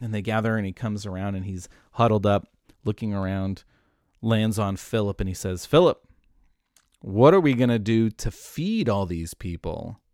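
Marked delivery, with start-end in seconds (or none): 5.6-10.0 acted teasing, slightly sarcastic, swooping pitch. Retelling a question put to Philip before a hungry crowd: imitating a sarcastic question. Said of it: "he's a little bit sarcastic".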